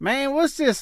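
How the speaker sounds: put-on high-pitched Tennessee accent. Retelling a friend's puzzled question about tweets: imitating Bo James, Tennessee accent. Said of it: "in that Tennessee accent".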